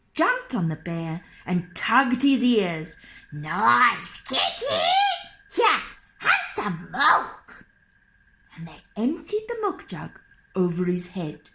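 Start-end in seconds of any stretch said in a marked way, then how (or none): 3.3-7.7 mischievous sing-song troll voices, swooping, "nice" drawn out. Narrator reading a folk tale, trolls speaking to a bear they think is a cat, trolls' voice.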